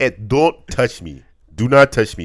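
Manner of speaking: very loud, high, put-on Nigerian accent. The other speaker gives a phrase to say in the accent: racist put-on accent. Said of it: "Do it better".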